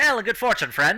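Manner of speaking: calling out at full voice. The guy with the spear and shield greets the party, loud voice. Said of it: "loud voice".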